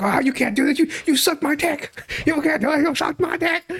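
very high, frantic, cornered pleading. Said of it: "And he's like".

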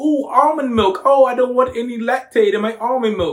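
loud, exaggerated, mocking, overdone American accent. Retelling how people from the uk make fun of americans, mocking american accent. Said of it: "they make fun of our accent ... Like that".

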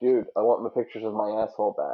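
ordinary delivery

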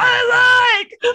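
very loud, shrill, drawn-out caveman yell. Picturing a dumb guy as a caveman: imitating a caveman yelling. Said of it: "picture him as a caveman sticking his dick in a hole going".

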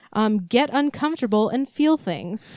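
plain

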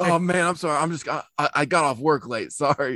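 pretend fumbling drunk voice. Playing a drunk roommate fumbling around at night: imitating a fumbling drunk roommate. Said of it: "fumbling, being like".

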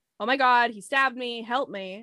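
usual speaking voice

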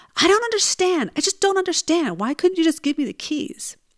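play-acted, full-on high-pitched yell. Retelling what a man yelled after being refused the keys, retelling his yell. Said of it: "he yells".

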